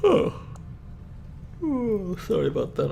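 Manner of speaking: "oh" yawned out at very high pitch. A streamer apologizes to stream viewers during a mission, yawning. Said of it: "I'm yawning right now".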